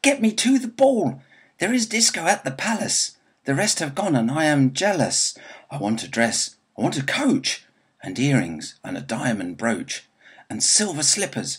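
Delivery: furious tantrum yelling, loud, high-pitched, swooping. Narrator reads a character beating her fist against the wall: shouting. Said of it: "She beat her fist against the wall and shouted".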